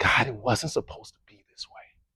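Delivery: very quiet, barely audible whisper through tears. Recalling crying out to god alone in a dark closet, whispering. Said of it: "just whispering".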